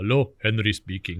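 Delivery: thick, broad put-on Swiss accent. Retelling how the father answered the phone: imitating a broad Swiss accent. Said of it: "he had a broad Swiss accent still".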